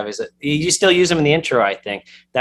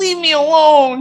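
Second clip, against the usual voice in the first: mock tough-guy voice turning meek, very high pleading; 5 dB louder than usual. Retelling how the man's voice changed, imitating a suddenly meek voice. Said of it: "his voice completely changes".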